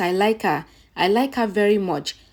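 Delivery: ordinary delivery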